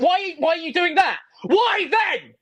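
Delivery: high, drawn-out, heated angry delivery. Demanding answers from someone who ignored him: yelling angrily. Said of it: "You're literally maximal yelling loudly".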